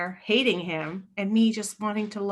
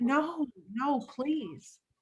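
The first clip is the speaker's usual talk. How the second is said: put-on soft, crying, tearful, desperate voice; 4 semitones higher, 4 dB quieter than usual. Retelling the day she packed her bags, re-enacting crying and begging her. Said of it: "Begging her, crying".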